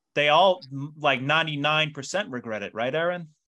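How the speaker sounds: normal talking voice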